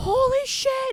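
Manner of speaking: put-on yelling. Retelling a childhood injury, imitating own yelling. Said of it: "And I start yelling".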